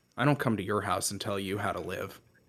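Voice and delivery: low, flat, dry deadpan. Retelling how someone looked at the american and just replied: mimicking a deadpan reply. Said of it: "looks at you deadpan".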